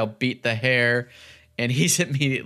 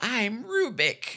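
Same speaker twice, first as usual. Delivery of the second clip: very high, squeaky little voice; 11 semitones higher, 4 dB quieter than usual. Recapping a show, the speaker quotes Rubik in a squeaky little Rubik voice. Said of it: "That squeaky little voice".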